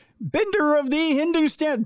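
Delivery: very high, pubescent, cracking voice. Introducing a guest while voice cracks like puberty; voice cracking like puberty. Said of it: "that sounded like I was going through puberty there".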